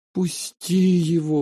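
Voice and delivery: begging, pleading, imploring tone. A little sister to her angry brother, begging. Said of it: "взмолилась сестренка".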